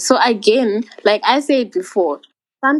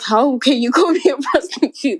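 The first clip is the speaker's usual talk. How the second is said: put-on sobbing, higher; 5 semitones higher than usual. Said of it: "now I'm crying".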